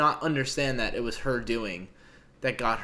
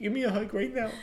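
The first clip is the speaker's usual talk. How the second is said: put-on very high little-kid baby-talk voice; 9 semitones higher, 4 dB quieter than usual. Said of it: "the little baby".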